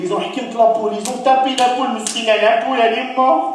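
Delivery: high, loud, weepy crying wail.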